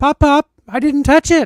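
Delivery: put-on high-pitched, loud child's yell. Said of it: "Chloe yells".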